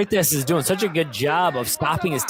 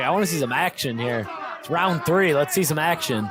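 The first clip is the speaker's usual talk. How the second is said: normal talking voice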